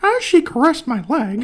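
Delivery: high squeaky cartoon voice, slow and swooping. Reading a line from a book series in a video, Mickey Mouse voice. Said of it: "like that, like straight up doing the Mickey Mouse voice".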